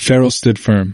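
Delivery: ordinary delivery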